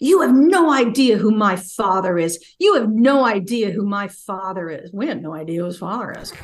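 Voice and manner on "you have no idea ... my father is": slow, enraged, furious scream at top of lungs. Retelling how a lawyer was escorted off the property: imitating someone screaming. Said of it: "her lawyer is screaming at the top of his lungs".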